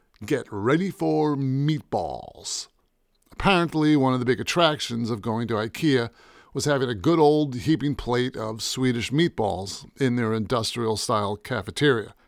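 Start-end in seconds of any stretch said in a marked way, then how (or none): 0.3-2.7 slow, authoritative, dramatic movie-trailer announcer voice. Speaker retells what they said to someone, in an authoritative film trailer voice. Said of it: "I said in my authoritative film trailer voice".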